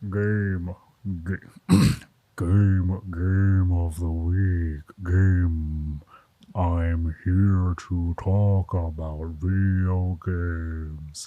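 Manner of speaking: very deep, very low, soft voice. Challenged to see how low the voice can go, announcing the game in a very low voice. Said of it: "low can your voice go?".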